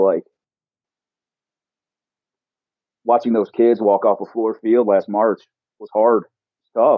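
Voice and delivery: voice choked up with emotion. Speaker recalling watching the kids walk off the field last March, choked up. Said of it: "here I am getting choked up over here".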